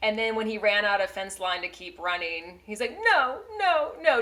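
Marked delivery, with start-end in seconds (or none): 3.1-4.2 super sad, very high, loud crying wail. Retelling how he reacted when he ran out of fence line, imitating a super sad no. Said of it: "just super sad".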